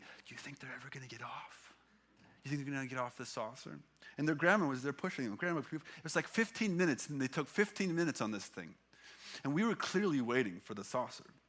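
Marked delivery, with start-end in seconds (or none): 0.0-3.8 soft, hushed whisper. Retelling what a child kept whispering while waiting for a swing: imitating a whisper. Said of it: "whispering to me".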